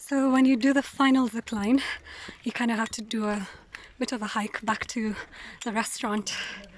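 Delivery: out of breath, phrases broken mid-way. Hiking back to the restaurant after the final zipline, talking while out of breath. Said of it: "i'm out of breath".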